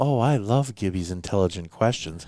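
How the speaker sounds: mock mooning, lovesick, gushing tone. Teasing a co-host by imitating him sounding in love: imitating someone lovestruck. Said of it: "it's like he's in love or something".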